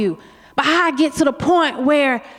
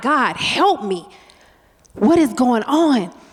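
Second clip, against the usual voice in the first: mock anguished, pleading, slow, desperate cry. Retelling a moment in an ambulance: reenacting crying out. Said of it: "I'm crying out like".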